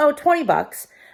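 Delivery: put-on offhand manner. Retelling a man's answer when asked a love seat's price, retelling a nonchalant reply. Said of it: "he said it so nonchalantly".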